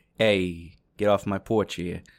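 put-on talking jack-o'-lantern voice. Joking about what jack-o'-lanterns say to people: talking jack-o'-lantern voice. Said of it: "They look at you and they say".

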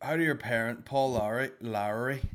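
bad put-on Northern Irish accent. Reading out a question, the speaker does it in a shitty northern irish accent. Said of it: "in a Northern Irish shitty accent".

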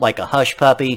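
ordinary talk, nothing marked

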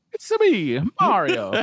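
high, loud, belted heroic delivery. Naming a favorite video game voice performance, quoting it: Mario voice. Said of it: "Charles Martinet in Mario sixty-four".

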